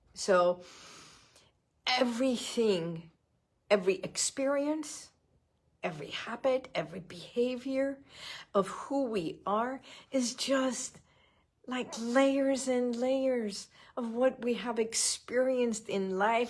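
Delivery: moved, heartfelt voice. Speaker, remembering a man whose birthday would have been next week: getting emotional. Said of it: "I'm getting emotional".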